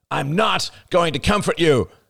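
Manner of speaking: sharp, high snapped words. Arlo, angry with Rachel, answers her by snapping. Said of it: "he snapped".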